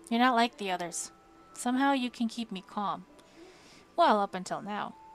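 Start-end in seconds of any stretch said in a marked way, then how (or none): none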